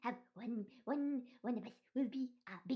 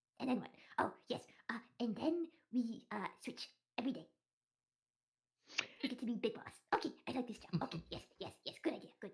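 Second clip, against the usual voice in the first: whispered, much lower pitch and much quieter; 2 semitones lower, 5 dB quieter than usual. Players as a flock of birds huddling in a corner to plan for a job, whispering. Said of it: "It is bird solidarity here, / I love question. I ask question. No. They ask question, we answer".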